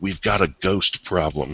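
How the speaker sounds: hushed voice. Voicing a character who leans forward to share a secret: whispering. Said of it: "lean forward and whisper to you".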